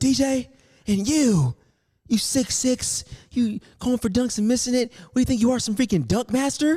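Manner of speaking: very high, shrill, angry top-of-the-lungs scream. Retelling what the fuming coach yelled in the locker room: imitating a coach yelling. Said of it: "screaming at the top of his lungs".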